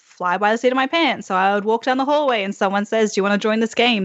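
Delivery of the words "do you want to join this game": ordinary talk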